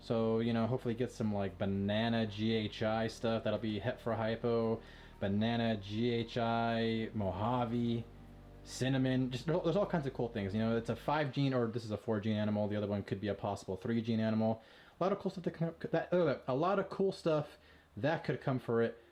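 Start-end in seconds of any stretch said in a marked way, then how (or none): 11.5-14.6 fast, rattled-off, rushed speech. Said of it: "I'm talking too fast".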